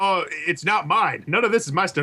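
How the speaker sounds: mock dismissive, disowning tone. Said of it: "You say it like".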